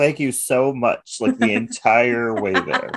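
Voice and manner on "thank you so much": mocking, dripping-with-sarcasm delivery, pitched up. Recapping a montage where a character thanks his dad, acting out sarcastic thanks. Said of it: "sarcastically thanking his dad".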